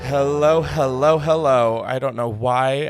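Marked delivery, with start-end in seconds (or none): 0.0-1.8 theatrical, campy cartoon villain voice with flourish.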